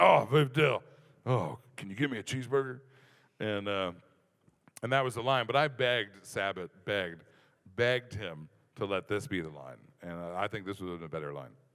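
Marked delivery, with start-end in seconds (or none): 0.0-2.8 put-on drunk character voice. Retelling a joke line where Mister Satan, drunk, asks Videl: drunk Mister Satan voice. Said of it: "where he's like".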